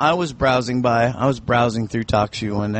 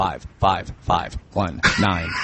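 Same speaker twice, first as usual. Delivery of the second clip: automated computer voice, much lower; 5 semitones lower than usual. Explaining how to enter numbers on phone helplines, talking like the computer. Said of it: "I figure if I talk like the computer does".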